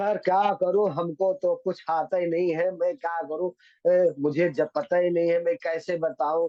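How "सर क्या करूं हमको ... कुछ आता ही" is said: plain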